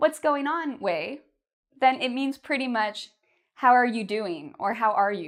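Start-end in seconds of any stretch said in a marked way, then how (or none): 0.0-0.8 very friendly, casual, pitched-up voice. Teaching how tone changes meaning, saying the phrase very friendly. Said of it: "in a very friendly".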